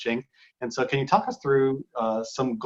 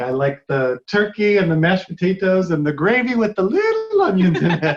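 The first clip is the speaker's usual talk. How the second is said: very loud, swooping, big, animated belted voice; 6 semitones higher, 9 dB louder than usual. Naming favorite holiday food, imitating Uncle Phil's voice. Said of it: "I sound like Uncle Phil from The Fresh Prince of Bel-Air".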